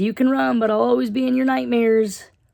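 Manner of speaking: very high-pitched, crazy, scary voice.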